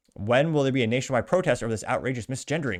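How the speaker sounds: usual speaking voice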